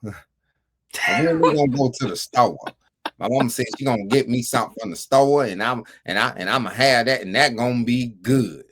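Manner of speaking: put-on broad, heavy country accent laid on thick, rattled off. Recalling how the speaker talked back in school, in a nasty country accent. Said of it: "I had a real nasty country accent".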